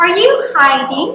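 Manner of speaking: yes-no question tune, pitch rising on hiding. Explaining intonation of yes-no questions, giving an example with rising intonation. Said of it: "the tone of my voice rises at the end".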